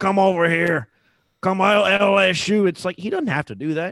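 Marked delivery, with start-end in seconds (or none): 0.0-2.7 mock drunk hollering, very slow, sloppy and loud. Retelling what a drunk fan called out at the plane: imitating a drunk fan. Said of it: "He, he was drunk".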